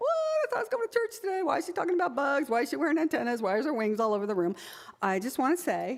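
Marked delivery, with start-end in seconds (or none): 0.0-4.5 baffled, bugged, puzzled, pitched-up voice. Voicing listeners puzzled by a bug talk at church: imitating a bugged, puzzled listener. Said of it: "are bugged by this topic".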